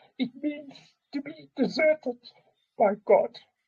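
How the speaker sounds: very high, choking up, on the verge of crying. Explaining the meaning of a poem to a listener, choking up near tears. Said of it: "I'm going to cry now".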